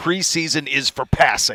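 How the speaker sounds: slow, play-acted, incredulous, emphatic exclamation. Retelling a quarterback's remark at a microphone, imitating someone yelling. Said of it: "yelling at the mic".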